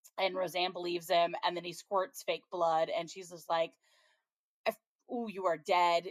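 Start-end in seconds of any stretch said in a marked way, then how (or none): 4.7-6.1 mad, fuming, furious delivery with a false start. Retelling how Roseanne reacted to a fake-blood prank: imitating furious Roseanne. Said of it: "she's so mad".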